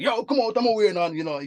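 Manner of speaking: put-on Jamaican accent. The speaker retells his own past words, in a put-on Jamaican accent. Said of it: "with the Jamaican accent".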